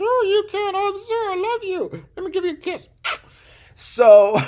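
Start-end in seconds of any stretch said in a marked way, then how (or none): 0.0-2.9 very high put-on puppet voice of a corpse. Retelling a story, pretending to make a dead man answer: voicing a puppeted dead man. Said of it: "I'll puppet the guy".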